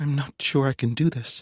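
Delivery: small, high, timid, frightened little voice. Narrator reads a character hanging back at a crime scene, in a small voice. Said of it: "she says in a small voice".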